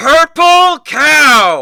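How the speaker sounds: very high, very loud yell, cow drawn out. Telling how he shouts into your head, retelling a loud shout. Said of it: "you hear really loud in your head".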